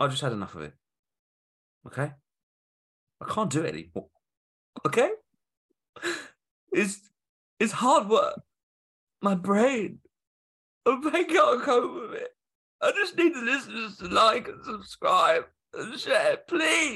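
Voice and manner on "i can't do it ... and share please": very high, put-on sobbing, whining fake crying voice. Podcast co-host, asked why, answers in a fake crying voice. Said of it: "That's my sex voice as well as my cry voice".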